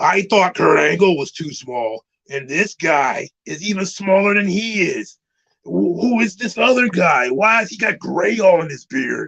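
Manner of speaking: put-on gruff, rough tough-guy voice. Doing a bit about wrestlers, in a gruff tough-guy voice. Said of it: "a little bit more gruff because he's trying to put on his tough guy voice".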